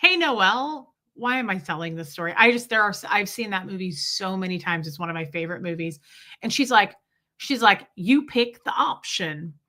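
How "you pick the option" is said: put-on old lady voice with an accent.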